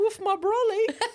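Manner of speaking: very high, shrill, loud put-on English accent. Teased by the other speaker for sounding more english, put-on english accent. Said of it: "you're progressively getting more English".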